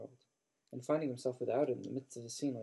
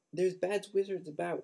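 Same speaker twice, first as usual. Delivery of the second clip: distracted, high, squeaky elf voice; 6 semitones higher, 4 dB louder than usual. Narrating a house elf struggling out of bushes, in a squeaky Winky voice. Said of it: "she squeaked distractedly".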